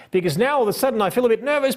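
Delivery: rattled off in a rush, very high pitch. Showing how speaking technique changes the energy, fast, hurried speech. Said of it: "we're speaking all fast".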